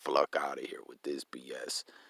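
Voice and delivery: hushed whisper under the breath. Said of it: "Ten ninety Jake was like".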